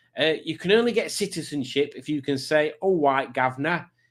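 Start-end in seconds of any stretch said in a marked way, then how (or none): 2.8-3.8 put-on London accent. Podcast host jokes about a citizenship requirement, saying it in an EastEnders accent. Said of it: "in an EastEnders accent".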